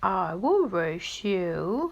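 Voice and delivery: slow, plodding, drawn-out turtle voice. Narrator voices the turtle offering to race the boastful hare, slow turtle voice. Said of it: "he said in his slow turtle voice".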